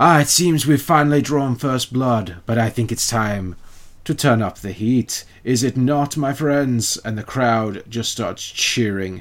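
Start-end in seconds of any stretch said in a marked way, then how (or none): 0.0-7.0 put-on voice sounding over arena loudspeakers. Voicing Jessar King speaking to an arena crowd over the speakers: Jessar King voice over speakers. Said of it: "Jessar King comes back on".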